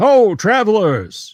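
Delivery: high, drawn-out call. Voicing a rider who calls out to travelers: guard calling out. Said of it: "you hear a voice call out".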